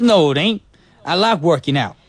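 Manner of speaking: put-on New York accent throughout. Acting a skit with a partner in a new york accent. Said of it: "do it with your New York accents".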